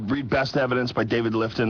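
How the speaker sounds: ordinary delivery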